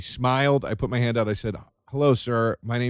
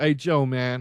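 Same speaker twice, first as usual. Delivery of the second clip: put-on Chicago Midwestern drawl, slower; 2 semitones higher than usual. Quoting a man who called out to him, Chicago Midwestern drawl. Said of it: "he has that real like Chicago, like draw".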